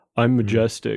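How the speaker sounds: mock vain dude bro voice. Mocking a character's vain look from a still image: imitating a vain dude bro. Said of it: "kinda like dude bro".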